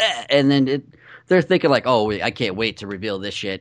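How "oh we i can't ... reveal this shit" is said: plain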